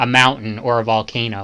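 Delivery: ordinary delivery, nothing marked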